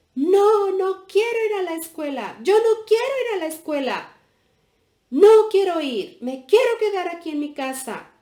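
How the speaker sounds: very loud, shrill, furious angry yelling. Reading a story, the little girl refuses to go to school: shouting angrily. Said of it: "empezó a gritar".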